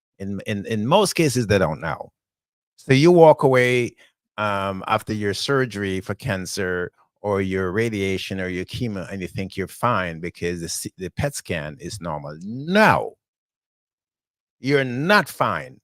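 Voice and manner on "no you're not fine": very slow, emphatic, swooping scolding. Speaking to the audience about cancer treatment, yelling at all of them. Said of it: "I'm yelling at all of you".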